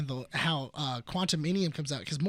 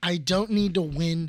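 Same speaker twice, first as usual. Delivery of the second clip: ordinary talk, nothing marked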